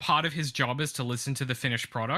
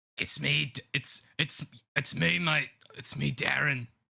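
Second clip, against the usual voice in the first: very slow, rough, creaky, halting, stumbling drawl. Imitating Darren Lockyer answering a fan: Darren Lockyer impression.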